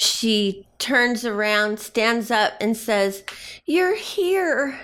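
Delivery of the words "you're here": very high relieved voice, here drawn out. Narrating a crying, laughing woman greeting you as you approach, in a relieved voice. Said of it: "in a relieved voice".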